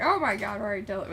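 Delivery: ordinary talk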